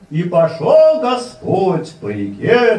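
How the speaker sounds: exaggerated, theatrical reading, slow, loud and high.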